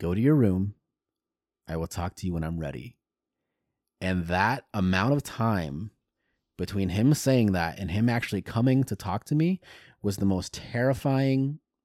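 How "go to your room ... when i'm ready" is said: steady, contained, even and level-voiced delivery. Retelling what the grandfather said after being handed the ticket, very quiet voice. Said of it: "in a very quiet voice".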